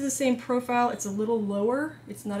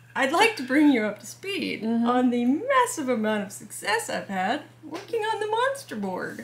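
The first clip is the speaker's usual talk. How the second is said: lightly sarcastic, swooping sing-song; 3 semitones higher than usual. Updating another speaker on progress on the monster board: a little sarcastic. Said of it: "I'm being a little sarcastic".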